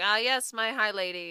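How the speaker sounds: mock-dry, teasing, slow sarcastic drawl. Acting out a friendly teasing moment between two characters: imitating Cassian being sarcastic. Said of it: "their little, you know, sarcastic friendship".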